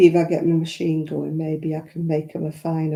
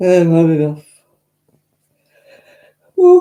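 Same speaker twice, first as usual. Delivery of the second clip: yawning, much louder; 10 dB louder than usual. Chatting about running out of wool as time to go nears, yawning. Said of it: "excuse me for yawning".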